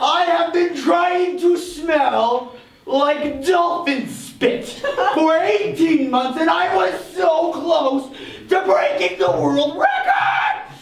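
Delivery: outraged ranting delivery.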